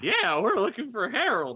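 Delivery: loud, swooping ghoul voice. Answering the ghoul while copying its voice: copying the ghoul voice. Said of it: "That's my voice".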